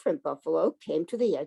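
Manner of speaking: ordinary delivery, nothing marked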